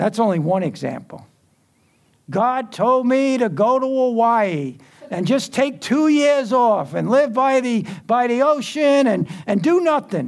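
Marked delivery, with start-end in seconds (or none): 2.3-10.3 heavy mocking sarcasm, put-on voice, raised pitch. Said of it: "That's sarcasm".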